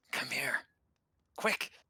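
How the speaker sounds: quiet, hushed whisper. Calling a companion over in character, whispering. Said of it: "Why are we whispering?".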